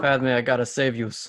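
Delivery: bad, terrible put-on Brooklyn accent. Mocking an actor's terrible accent in a movie role, in a bad brooklyn accent. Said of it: "I think it was like a Brooklyn accent".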